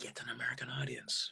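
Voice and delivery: very soft, voiceless whisper. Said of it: "I always heard a whisper in my ear saying".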